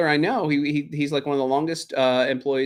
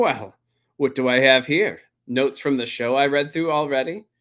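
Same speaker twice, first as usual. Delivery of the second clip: newsreader voice, reading out. Mocking an anchor who puts on glasses to read notes. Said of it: "he's put on his glasses and he's like".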